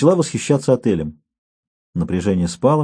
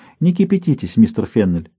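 plain reading voice

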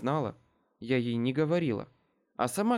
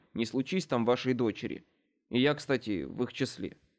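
plain reading voice

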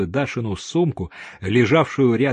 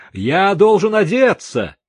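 loud, high-pitched shouting; 9 semitones higher, 6 dB louder than usual. The narrator answers police at his door demanding he open up, shouting. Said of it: "крикнул я".

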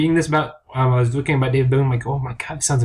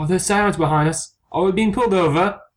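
put-on nervous voice, higher pitched; 6 semitones higher than usual. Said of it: "He looks so nervous".

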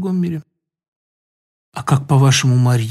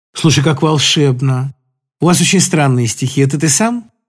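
plain

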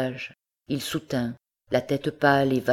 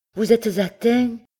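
high, shaking, quavering, trembling voice; 9 semitones higher, 4 dB louder than usual. The former master porter asks the wounded Philippe, in a trembling voice. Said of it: "d'une voix tremblante".

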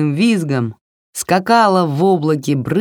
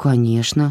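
embarrassed, abashed; 4 semitones lower than usual. Reading a girl's answer to the grandmother's question, embarrassed. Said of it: "смущенно сказала Варя".

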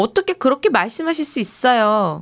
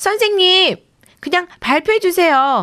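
eager, impatient, high-pitched shout; 8 semitones higher than usual. A pupil interrupts the teacher before she finishes, impatient shout. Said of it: "마음이 급한 딜리가 소리쳤어요".

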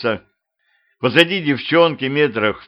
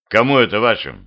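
ordinary delivery

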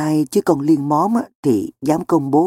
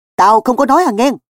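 sudden, loud, high-pitched exclaimed outcry, crying out; 9 semitones higher, 5 dB louder than usual. Pulling his bike away from the accusing narrator, the accused character is crying out. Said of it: "Phú Ghẹ giạt xe ra xa và kêu lên".

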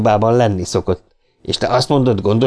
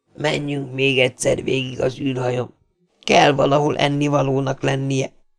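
weak, feeble, soft, strengthless voice; 2 semitones higher, 5 dB quieter than usual. After a long silence, Powell speaks to the other men, weakly. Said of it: "Powell erőtlenül megszólalt".

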